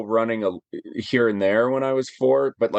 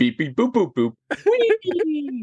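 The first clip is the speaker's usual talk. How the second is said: very high, swooping, beeping little robot voice; 14 semitones higher than usual. Retelling how his fiancée answers what R2 says, doing R2-D2 beeps. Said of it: "that's my Star Wars impression".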